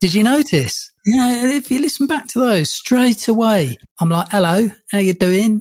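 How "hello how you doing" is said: put-on London Cockney accent. Recalling how they sounded on an earlier podcast, Cockney accent. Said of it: "my Cockney accent".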